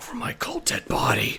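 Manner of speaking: breathy, soft, hushed whisper under the breath. Answering a question about the bomb: whispered Jack Bauer impression. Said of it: "Was that a good Jack Bauer impression".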